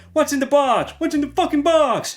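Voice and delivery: bad, very high movie voice. Showing off collectibles, quoting a movie line: bad Brad Pitt imitation. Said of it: "bad, uh, imitation of Seven, Brad Pitt".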